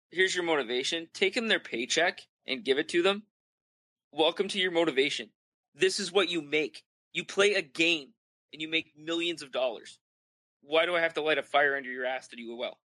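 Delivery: ordinary talk, nothing marked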